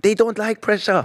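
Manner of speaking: horrible, exaggerated put-on Italian accent, high-pitched. Quoting Conte's parting words at Spurs: horrible Italian accent as Conte. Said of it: "That's that was a horrible Italian accent".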